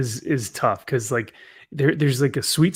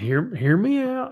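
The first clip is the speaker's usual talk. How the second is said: put-on country accent, high-pitched; 8 semitones higher than usual. Imitating a friend's catchphrase in a country accent: imitating a country accent. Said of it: "Yana's just loving this accent".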